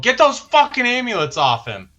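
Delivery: very high, swooping yell. Yelling an order to the group before the turn ends: yelling. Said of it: "I'm just gonna yell".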